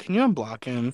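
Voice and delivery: put-on disappointed tone. Recalling the best part of a story about a party invite: imitating Spec's disappointed voice. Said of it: "the disappointment in Spec's voice".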